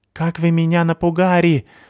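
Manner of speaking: quavering, trembling, very high-pitched cry. Reading a character's line after a companion nearly fell, in a trembling voice. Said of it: "сказала дрожащим голосом Сыкиль".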